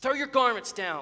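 irritated, cross voice. Ignored by the people at the well, he speaks to them crossly. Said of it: "he said crossly".

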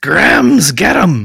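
very loud, raspy, rough, barked ogre yell. Game master voicing a towering ogre in the game, ogre yelling orders. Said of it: "And then yells".

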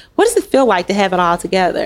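ordinary talk

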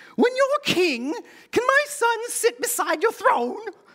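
very high, silly British sketch-comedy voice. A speaker retells a mother's request to Jesus, in a Monty Python impersonation. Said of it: "That's my Monty Python impersonation".

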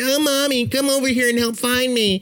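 high, whiny mock tantrum.

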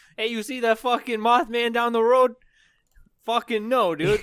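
terrible Chicago accent, very high-pitched and loud. Joking about the Chicago Mothman, playing Chicagoans in a terrible Chicago accent. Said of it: "That sounds like northern Minnesota".

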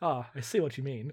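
mock flat, quiet delivery. Describing a bar fight in an episode, quoting the line, imitating Worf's deadpan. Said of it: "Worf just deadpan goes".

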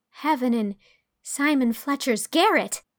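astonished gasp. Anne reacts to Davy's idea about heaven: amazed gasp. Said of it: "gasped Anne, too amazed even to laugh".

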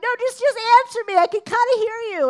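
very high, loud, fast shout. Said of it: "I'm shouting and screaming across".

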